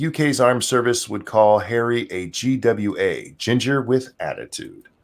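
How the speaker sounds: ordinary delivery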